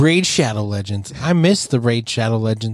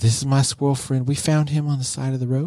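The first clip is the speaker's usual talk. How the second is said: soft, put-on painter voice; 3 semitones higher, 3 dB quieter than usual. Imitating a TV painter introducing his squirrel friend: soft Bob Ross voice. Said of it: "his soft voice".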